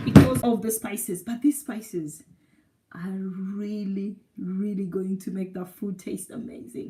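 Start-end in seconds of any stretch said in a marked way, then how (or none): 1.2-6.9 drawn-out, slow, low, hushed, far softer speech. Showing how to cook with spices, the speaker is talking slowly. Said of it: "Why am I talking slowly?".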